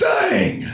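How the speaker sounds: one booming, very loud, sudden yelled word. Voicing a mob leader in a game scene: yelling. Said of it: "he just yells".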